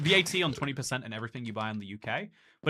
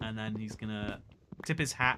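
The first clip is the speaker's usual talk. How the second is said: ordinary talk, nothing marked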